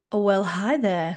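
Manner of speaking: put-on, sultry, sensual voice. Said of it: "That was a nice sensual start".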